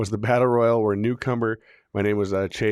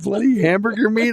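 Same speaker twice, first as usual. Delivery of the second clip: put-on tearful crying voice, higher and louder; 12 semitones higher, 5 dB louder than usual. Retelling his mom's reaction to a harsh review: imitating someone crying. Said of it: "She's, like, crying".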